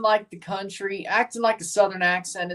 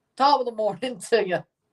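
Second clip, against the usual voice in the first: put-on Irish accent; 3 semitones higher than usual. Trying out accents one after another, now doing an irish accent. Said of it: "That's Irish".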